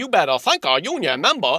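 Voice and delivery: mocking, imitated put-on Southern American accent.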